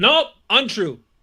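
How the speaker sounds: loud, slow yelling.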